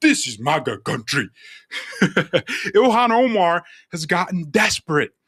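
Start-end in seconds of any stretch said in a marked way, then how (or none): 0.0-1.3 put-on typical Nigerian accent, very deep and low. Retelling the scream of men hired for a staged attack, in a typical Nigerian accent. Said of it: "or in a typical Nigerian accent".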